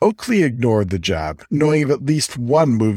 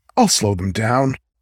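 usual speaking voice

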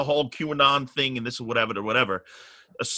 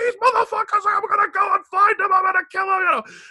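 shrill, high, frantic, furious screaming; 6 dB louder than usual. Retelling a rant after seeing own photo online: imitating his own furious screaming. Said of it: "I was screaming in the car".

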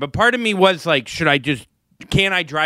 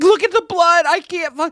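much higher, mock hysterical sobbing and yelling; 3 dB louder than usual. Retelling a New Year's Eve story, imitating Brenna crying hysterically. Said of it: "crying hysterically, yelling like".

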